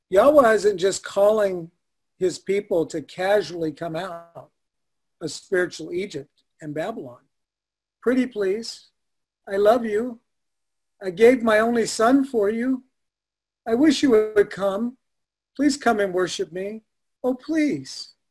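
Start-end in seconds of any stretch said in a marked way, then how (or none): 8.0-18.0 acted, facetious, pleading, coaxing, needy begging voice. Speaker teaching about Yahweh facetiously voices Him begging his people, mock pleading. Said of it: "I'm being a little facetious".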